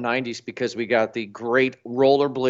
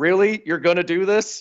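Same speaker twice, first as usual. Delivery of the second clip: higher-pitched mock yell; 6 semitones higher than usual. Retelling a basketball game with kids at the park: imitating own past yell. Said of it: "I just yelled".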